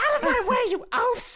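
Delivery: very high squeaky voice. Voicing the kobold shaman leader in a told story, Toad from Mario voice. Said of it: "now I have to do a voice".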